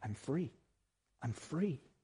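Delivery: slow, quiet mutter under the breath. Telling how Zamperini walked around the camp yard: imitating muttering under breath. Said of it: "muttering under his breath".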